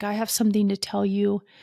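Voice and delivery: imitated crying, tearful voice. Retelling a phone call from an ex who was crying: imitating someone crying. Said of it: "and he's crying".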